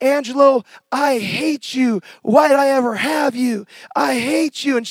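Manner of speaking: mock pained, venomous, held-back scream, drawn out, bitter. Retelling a woman screaming at him in the kitchen, imitating someone screaming. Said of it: "she's even screaming at me".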